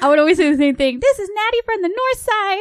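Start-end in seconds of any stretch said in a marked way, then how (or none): 1.0-2.6 put-on squeaky, very high kid weather-girl announcer voice. Retelling calling in to the radio as a child: imitating her childhood weather girl voice. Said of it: "I would say it like that".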